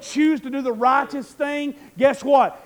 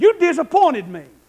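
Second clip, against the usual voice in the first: voice raised loudly; 3 semitones higher, 5 dB louder than usual. Recalling a parent walking in to tell him off as a kid: retelling a parent raising voice. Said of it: "raised their voice and said".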